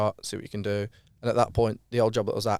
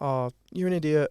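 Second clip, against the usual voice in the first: fake, sugary sweet voice, pitched up; 6 semitones higher than usual. Speaker insults their dog while using a fake nice voice. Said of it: "put on like the voice of being nice".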